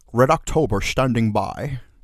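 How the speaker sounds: slow, drawn-out put-on Scottish accent. Speaker offers to show off their Scottish accent, doing a Sean Connery Scottish impression. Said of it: "would you like to hear my Scottish accent?".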